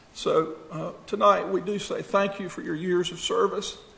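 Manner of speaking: high, emotional voice choking up, about to break. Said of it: "I'm sorry for getting emotional".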